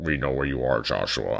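low, deep, put-on disguised voice. Quoting a message to Joshua from unknown senders: anonymous deep voice. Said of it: "it's that like anonymous deep voice".

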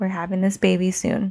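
normal talking voice

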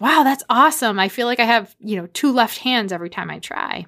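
acted, all worked up, impressed, excited gushing. Retelling Michael's reaction to the dad's braiding: imitating Michael's excitement. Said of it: "Michael gets all excited".

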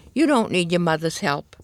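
plain reading voice

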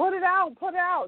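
mock, high-pitched yell, said twice over. Retelling a grandmother yelling to put a house fire out: imitating someone yelling. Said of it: "my grandmother is in the background yelling at me".

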